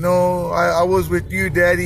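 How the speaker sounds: ordinary talk, nothing marked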